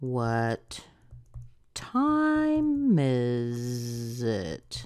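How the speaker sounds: question-like tune, pitch rising then dropping on it. Teaching WH-question intonation, rise then fall on 'it'. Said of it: "We rise here and then we go down".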